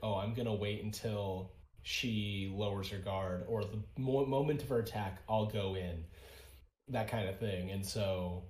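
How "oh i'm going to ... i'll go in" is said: plain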